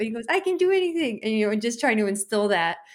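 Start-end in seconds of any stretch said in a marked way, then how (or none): 0.3-1.2 mock, very high-pitched, loud called-out shout. Retelling the husband's bedtime routine with their child: imitating someone yelling. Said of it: "he yells out".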